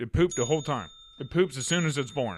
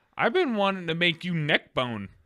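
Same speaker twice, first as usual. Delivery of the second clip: ordinary delivery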